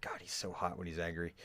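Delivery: very soft, barely voiced, just above a whisper. Voicing a character who speaks while walking right behind him: just above a whisper. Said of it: "not quite a whisper, but, like, above that".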